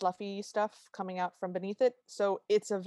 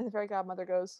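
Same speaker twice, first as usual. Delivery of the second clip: ordinary talk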